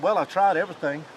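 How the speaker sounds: plain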